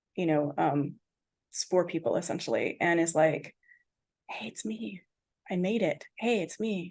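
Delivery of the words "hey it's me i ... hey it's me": subdued, very quiet, soft, hushed voice. Retelling how she broke character at San Francisco City Hall, imitating her quiet voice. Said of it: "She's very like quiet".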